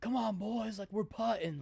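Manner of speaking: loud, high call-out. Recounting a golfer who yelled back at young players on the green: retelling a golfer yelling. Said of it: "yells back like".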